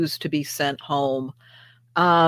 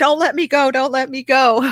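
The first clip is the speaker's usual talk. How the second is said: mock frightened little kid's scream, very high, panicked; 10 semitones higher, 4 dB louder than usual. Retelling being held tight in the waves as a child: imitating a childhood scream. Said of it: "I'd be screaming".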